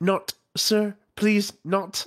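put-on very high, very loud, panicked broken English. Retelling an audiobook scene of an honorspren chasing Kaladin: imitating a frantic voice in broken English. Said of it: "really frantic voice in kind of broken English".

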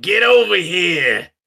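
put-on Brooklyn accent on the whole line. Retelling what he told a guy he was talking to, in a Brooklyn accent. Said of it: "in a Brooklyn accent".

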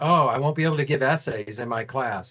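plain

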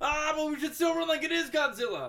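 high, loud, panicked crowd yell.

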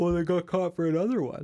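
talking through a yawn. Speaking with another person, talking through a yawn. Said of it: "Sorry, I'm yawning".

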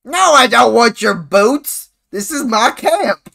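furious, high, angry bellow at very loud volume. A character refuses a boot seller and defends his camp: yelling. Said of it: "the man yell on the spider yell".

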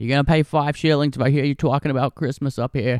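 put-on Bostonian accent. Recounting Christmas history, the speaker quotes the Boston rule against Christmas, in a Boston accent. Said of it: "talk like a Boston accent".

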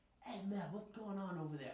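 put-on heavy, clumsy British accent. Retelling what Jason asked him near a crowd of people, in a thick British accent. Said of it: "In his fucking thick British accent".

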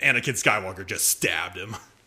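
plain

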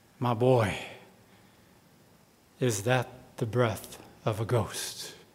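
very low, soft, hushed deep voice. Reading a story, the narrator voices the unseen speaker answering the boy, in a deep voice. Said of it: "the deep voice replied".

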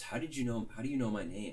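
put-on worried, very concerned little child voice. Retelling a park video where a kid turns around: imitating a very concerned kid. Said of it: "very concerned".

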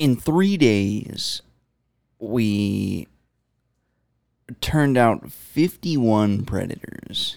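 fake television announcer voice. Asked for an impression, doing a Chris Hansen impression. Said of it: "Give me your best Chris Hansen impersonation".

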